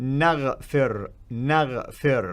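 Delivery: naghfir slow, careful, each sound laid out deliberately. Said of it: "I say it slowly".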